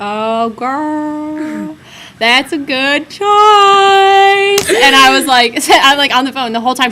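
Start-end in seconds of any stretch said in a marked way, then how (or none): 0.0-3.2 put-on Southern American drawl, "girl" drawn out. Quoting a woman's reply on the phone, imitated Southern accent. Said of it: "I'm totally gonna butcher this, but she, and then she said in her southern accent".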